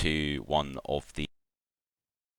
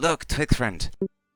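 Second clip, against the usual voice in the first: high, excited creature voice with broken speech. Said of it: "and just goes".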